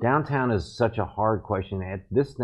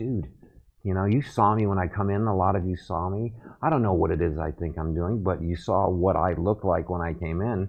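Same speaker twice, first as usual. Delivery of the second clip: ordinary talk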